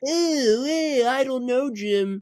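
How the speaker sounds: very high, loud, drawn-out booth voice. Mocking how Romo sounds in the announcer booth: imitating Romo in the booth. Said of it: "he does the".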